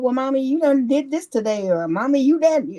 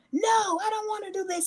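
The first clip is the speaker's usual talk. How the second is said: put-on screaming child voice, higher; 8 semitones higher, 7 dB quieter than usual. Retelling hearing a child in Walmart: imitating a screaming child. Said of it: "you can hear kids screaming".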